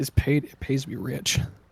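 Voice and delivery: muttered under breath. Voicing Cor after pulling out a chair: muttered under his breath. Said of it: "Cor says under his breath".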